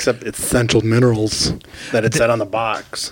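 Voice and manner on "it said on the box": ordinary talk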